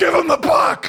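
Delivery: desperate, shrill, very high screaming. Retelling a broadcaster shouting during a late play: imitating Rob Ray screaming. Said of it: "now he's screaming".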